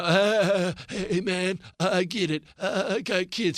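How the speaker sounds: very slow, mealy-mouthed drawl, stalling on each uh. Mocking a politician's interview answer: imitating Gavin Newsom's voice. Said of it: "that stupid voice he's got?".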